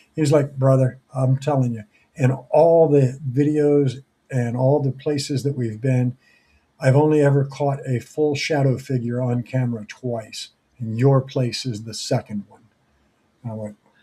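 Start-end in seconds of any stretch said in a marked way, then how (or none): none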